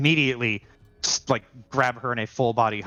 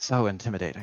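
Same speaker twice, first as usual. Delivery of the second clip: smirking, mocking tone, lower; 3 semitones lower, 4 dB quieter than usual. A game master voices a character answering a player's boast: smirking, mocking. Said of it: "He just smirks and just goes".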